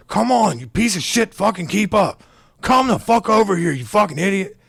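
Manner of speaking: put-on aggressive drunken yelling. Retelling a drunk man screaming at his child: imitating a drunk man screaming aggressively. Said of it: "screaming at his, like, six-year-old child super aggressively".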